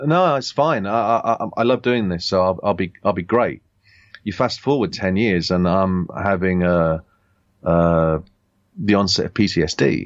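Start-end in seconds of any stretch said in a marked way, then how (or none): none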